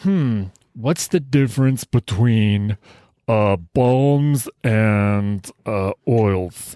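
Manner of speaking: very slow, drawn-out, pondering and wondering. Imagining a listener asking a question on the live stream: impersonation of Ryan Gore. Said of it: "that's my impersonation of him".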